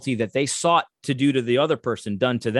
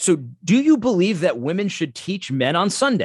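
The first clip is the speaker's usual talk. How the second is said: put-on exasperated, frustrated, blunt tone; 6 semitones higher than usual. Retelling a question once asked of another person: imitating own frustrated question. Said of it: "I just kinda got frustrated".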